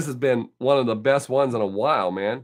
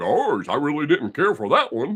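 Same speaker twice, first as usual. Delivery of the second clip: cartoon dog voice, swinging delivery. Telling Mark how his comments sound when read, in Goofy voice. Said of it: "I read it in Goofy's voice".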